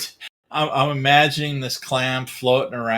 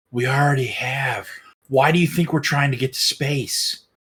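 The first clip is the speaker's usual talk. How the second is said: whispering. Retelling the punchline of a joke prompt as the NASA person's reply: whisper. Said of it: "in a whisper".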